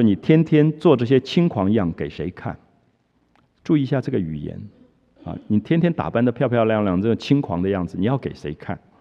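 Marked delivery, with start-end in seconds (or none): none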